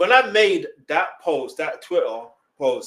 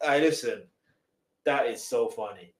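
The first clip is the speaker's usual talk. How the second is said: usual speaking voice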